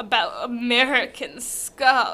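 put-on posh, upper-class delivery. Repeating a phrase while reading a story aloud: posher voice. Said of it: "'Cause it needs to be posher".

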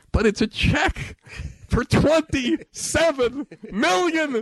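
put-on yell, very high and shrill. Retelling how a man yelled into the phone again; retelling a yell into the phone. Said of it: "he yells into the phone again".

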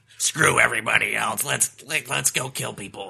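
barking, aggressive put-on voice. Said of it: "he sounds like a barking dog".

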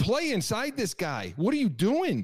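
mock high, swooping scream. Speaker retells screaming at a game on TV: retelling screaming at the TV. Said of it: "I'm screaming at the TV".

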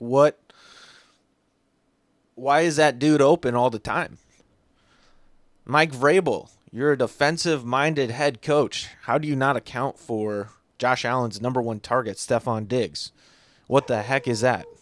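usual speaking voice

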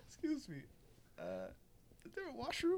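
put-on very slow, drawn-out old man voice, pitched high, soft. Retelling what a very elderly man asked on walking into the store, imitating his slow speech. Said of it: "he's talking so slow".

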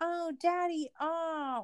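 high, soft, fake whiny voice.

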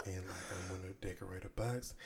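secretive, hushed, private half-whisper. Retelling half-whispering to a woman in a store: imitating own half-whisper. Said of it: "I whisper to her".

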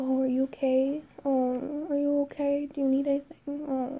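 high, fake kind voice, all put-on concern. Recounting how people who wouldn't leave the speaker alone talked to them: mocking a fake kind voice. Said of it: "in this fake, like, kind voice".

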